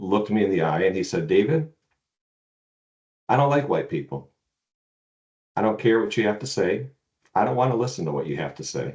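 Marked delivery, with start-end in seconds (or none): 1.3-8.9 gentle, kind, calm, plainly matter-of-fact. Retelling what a man said to him, calling him david, retelling a soft, kind remark. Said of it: "he said it so kindly and so softly".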